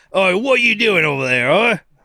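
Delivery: put-on thick British accent. Describing an arc full of British characters, mimicking one: heavy British accent. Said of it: "there are so many heavy British".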